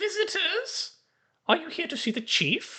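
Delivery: very high, eerie, haunting skeleton voice. A storyteller voicing a creature greeting visitors, in a haunting high-pitched voice. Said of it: "its hauntingly high pitched voice says".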